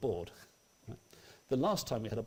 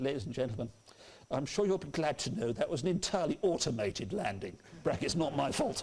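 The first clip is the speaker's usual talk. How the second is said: put-on airline captain cabin announcement voice; 3 semitones higher than usual. Retelling a captain's announcement after a bumpy landing: British Airways captain voice. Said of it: "in that voice that only British Airways can do".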